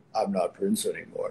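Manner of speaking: very deep voice, dropped as low as possible. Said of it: "He got that deep-ass voice".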